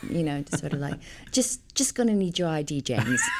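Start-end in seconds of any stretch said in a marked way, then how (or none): 1.3-3.2 lightly put-on English, British-sounding accent. Showing the kind of line she had to deliver in a British accent. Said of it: "I had to do a British accent".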